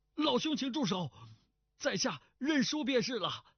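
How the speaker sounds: very high, quavering, trembling, scared pleading cry. A narrator voices a man watching his beloved sword being smashed, trembling frightened cry. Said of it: "颤声叫道".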